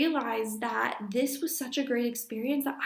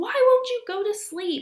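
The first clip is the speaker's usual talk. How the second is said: very high, shrill sobbing scream; 9 semitones higher, 7 dB louder than usual. Recalling a morning in the nursery with a child who wouldn't sleep: retelling sobbing and screaming. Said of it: "crying and sobbing and screaming so loud".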